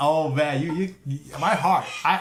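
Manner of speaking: excited stammering, heart racing. Streamer reacting on stream to a Nintendo announcement, excited stuttering. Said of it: "I'm stuttering because my heart is racing".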